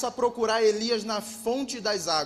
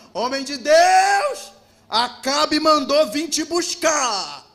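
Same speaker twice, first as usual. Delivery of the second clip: mock scornful call, loud, slow, "Deus" drawn out; 4 semitones higher, 7 dB louder than usual. Retelling a captain calling the prophet in the sermon: imitating a mocking tone. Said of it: "é num tom de deboche".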